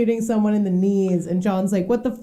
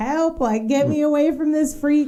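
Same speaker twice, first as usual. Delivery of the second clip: mock kid's cry, high, light and kept small; 5 semitones higher than usual. Retelling a scene where the boy is picked up, imitating John screaming.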